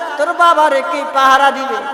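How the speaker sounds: high, loud, tearful pleading.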